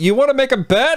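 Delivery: high-pitched yelling.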